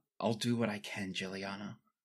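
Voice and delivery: very low, hushed murmur under the breath. Game master voicing Sybil sitting down beside Jill, in a very low voice. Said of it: "say in a very very low voice".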